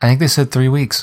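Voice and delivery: dry, straight-faced, flat deadpan delivery. Discussing a player's knee injury, giving a deadpan delivery. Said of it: "deadpan delivery always gets me".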